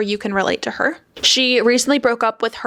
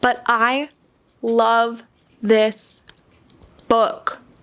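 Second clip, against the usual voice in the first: teary, choked up, halting, breaking voice. Telling viewers about a new favorite book read this month, tearing up. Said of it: "I'm like tearing up".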